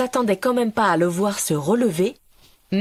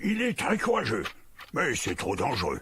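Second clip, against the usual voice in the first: put-on aged, hoarse, raspy old voice, very low and soft; 9 semitones lower, 9 dB quieter than usual. Narrator voicing a third speaker in a group discussion, old, raspy voice. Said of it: "une troisième voix, qui semblait âgée et rauque".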